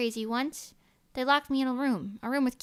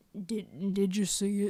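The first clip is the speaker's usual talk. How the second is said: attempted deep voice, pitched as low as possible; 4 semitones lower than usual. Explaining a catchphrase from a show, the speaker tries the Manny the Manatee voice. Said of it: "I can't do it as deep as they do".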